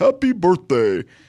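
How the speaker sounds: put-on cartoon character voice. Recalling the cartoon snowman coming to life, in a Frosty the Snowman voice. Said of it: "That's my best impression of Frosty".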